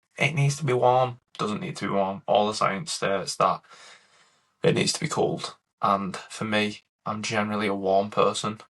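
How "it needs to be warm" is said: put-on, insistent, yelled screaming. Imagining how Nick will react on hearing this: imitating Nick screaming. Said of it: "Nick's going to be screaming at this".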